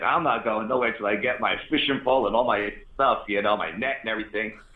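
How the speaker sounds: usual speaking voice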